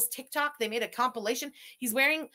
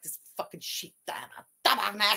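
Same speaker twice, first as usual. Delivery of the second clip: put-on muttering under breath; 3 semitones lower than usual. Imitating him swearing, imitating someone muttering under breath. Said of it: "Under his breath, he's like".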